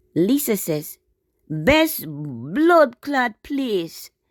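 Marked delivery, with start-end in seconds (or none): 1.4-4.1 clumsy, bad fake Jamaican accent, loud and very slow. Reading out someone's comment aloud, in a bad Jamaican accent. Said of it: "I have very bad Jamaican accent".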